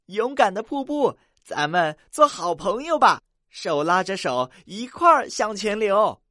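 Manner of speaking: joyful, very loud, high calling out. Reading a children's story aloud, voicing the little river: happily calling out. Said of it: "小河高兴地叫起来".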